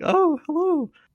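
tiny, very high puppet squeak. Imitating a woman who talks back to herself: little puppet voice. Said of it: "she does the little puppet voice. She does like".

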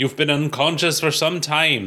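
clumsy, badly done attempt at an Irish accent. Reading a comic aloud, voicing Officer Daly: attempted Irish accent. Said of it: "I can't do an Irish accent".

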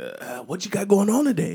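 put-on very high, overeager voice with excited rising tune. Retelling what a worker at the window asked in the evening: imitating an excited worker. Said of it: "you shouldn't say that with that much, uh, excitement".

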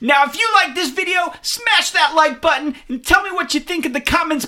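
very high-pitched, loud voice. Speaker demonstrates how to present a toy review video, really excited voice. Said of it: "You gotta talk in a really excited voice".

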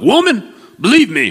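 high-pitched, loud Southern drawl. Joking about how a bible line would sound: southern accent. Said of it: "Jesus didn't have a Southern accent".

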